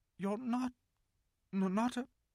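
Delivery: trembling, very high-pitched voice that breaks off. Narrating a story, voicing a girl who can't bring herself to speak; shaky voice. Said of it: "asked Susan in a shaky voice".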